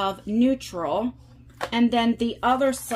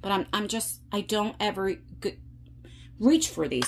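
stumbling, stuttering, stammering over words; 2 semitones lower, 5 dB quieter than usual. Sorting through old makeup palettes to get rid of, stuttering. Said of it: "I'm stuttering".

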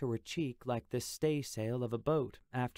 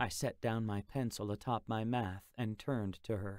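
ordinary delivery

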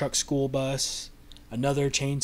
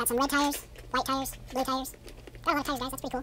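sped-up, fast-forwarded voice; 12 semitones higher than usual. Sorting a pile of building-set tires, the speaker tries out a sped-up voice. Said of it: "what if I speed my voice up?".

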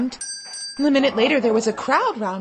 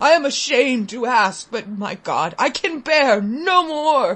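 slow, hollow, trembling voice. A father begs the gentlemen for help: hollow, shaking voice. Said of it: "my father said in a hollow, shaking voice".

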